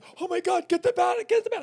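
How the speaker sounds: acted, shrill, very high shriek. Recounting a bat loose in the bedroom, imitating him screaming. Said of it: "He's screaming and yelling at me".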